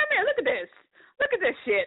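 very high, worked-up, excited voice swinging wildly up and down. Retelling calling her husband over to look, in her Kevin Hart voice. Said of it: "in my Kevin Hart voice".

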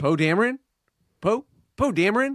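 put-on very high-pitched voice with American accent. Mimicking how he says Poe Dameron: John Boyega's American accent. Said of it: "because of John Boyega's American accent, he goes".

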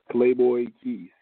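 loud, slow, deliberate, drawn out, each word spaced. A guest repeats their Instagram handle at the host's request, louder and slower. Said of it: "a little bit louder, and can you say it a little slower?".

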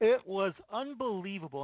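words stretched out, spoken through a yawn. Talking about a player's saves in a game, yawning while talking. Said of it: "I apologize for the yawning".

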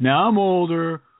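sour, miserable grumbling. Imitating a man in a smokeless tobacco radio commercial: imitating a miserable bitter jerk. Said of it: "the guy sounds like the most miserable jerk ever".

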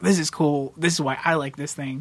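ordinary talk

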